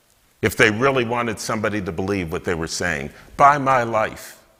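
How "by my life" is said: passionate, slow, earnest delivery. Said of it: "they would say this passionately".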